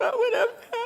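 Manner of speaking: little whiny voice, soft, breathy, half whispered. Retelling her own past complaining to the audience: imitating her own whiny self. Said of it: "I'm in my little whiny".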